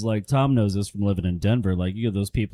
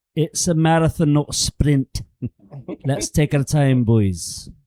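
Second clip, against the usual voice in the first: put-on pitched-up Scottish accent; 5 semitones higher, 3 dB louder than usual. Retelling what he reminds everyone on golf trips, in a Scottish accent. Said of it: "I remind everyone in a Scottish accent".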